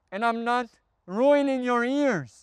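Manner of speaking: all-out high, full yell. Demonstrating recording levels in a video, yelling. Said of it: "I can also yell like this".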